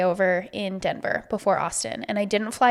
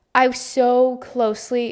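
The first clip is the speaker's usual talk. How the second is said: usual speaking voice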